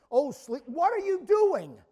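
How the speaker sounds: pressing, urgent call. Putting tone into a line of scripture: urgent tone. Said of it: "I'm going to try to put the tone".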